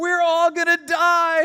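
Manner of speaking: high, loud terrified cry. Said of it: "kid just cries out".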